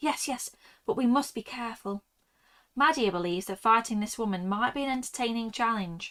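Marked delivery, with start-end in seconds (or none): 0.0-2.0 muttered self-talk, arguing with herself. Narrating a bitten woman arguing with herself, muttering to herself. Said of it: "she mutters".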